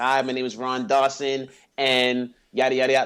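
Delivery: shallow, depthless speaking voice. Contrasting the host's deep voice with a mock version lacking depth: imitating Ron Dawson without voice depth. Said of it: "It's not like you talking like this".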